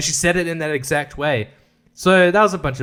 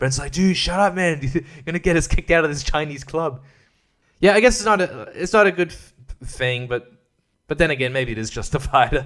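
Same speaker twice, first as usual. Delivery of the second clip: plain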